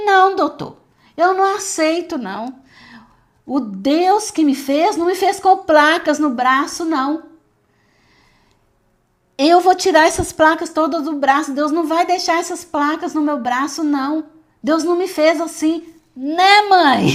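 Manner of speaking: high, loud, angry indignant voice. A mother recounts her daughter answering the doctor, imitating her angry daughter. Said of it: "porque ela estava brava".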